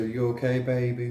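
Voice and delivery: put-on sweet Texas accent. Retelling what a woman beside him asked: imitating a sweet, soft Texas accent. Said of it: "With that Texas accent, real sweet and soft".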